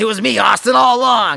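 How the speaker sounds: very loud, raspy, rough, dramatic villain yell. Speaker acts out the wrestling reveal after the mask comes off, Vince McMahon impression, yelling. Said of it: "Why are you yelling at Stone Cold?".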